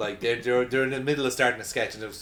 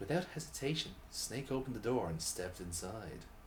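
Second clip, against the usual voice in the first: very soft, hushed, sultry, sexy narrator voice; 13 dB quieter than usual. Reading a story aloud after offering to do it as a sexy narration. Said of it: "I can do a sexy narration".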